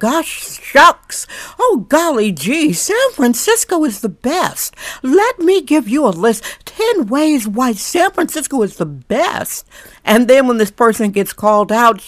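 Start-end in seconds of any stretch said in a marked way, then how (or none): 0.0-9.7 high, gushing, fake-cheery, phony sweet voice. Mocking a local newspaper writer, mocking her fake Pollyanna persona. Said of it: "kind of like a fake Pollyanna persona".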